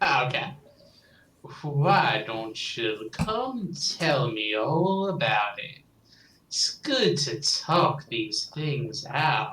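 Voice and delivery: deep gravelly put-on voice. Voicing a character inviting someone to talk it out: low, rough Graves voice. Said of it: "I like doing his voice".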